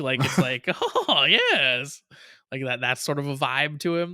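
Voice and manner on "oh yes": put-on weird, odd creature voice. Describing a game character's weird voice by imitating it: Gollum-esque Dark Geats voice. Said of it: "weird voice about him that's like it's kind of like like almost Gollum esque".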